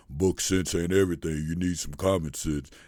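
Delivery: mock very deep voice. Quoting what the speaker's father would always say, in a deep, deep voice. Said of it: "My father had this deep, deep voice".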